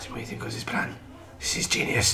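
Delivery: mock German-accented spy voice, hushed and breathy.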